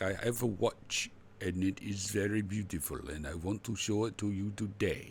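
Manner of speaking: put-on English spoken with a Russian accent. Imitating a man in a watch video he thinks is russian: russian accent impression. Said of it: "his accent is is is and he talks like this".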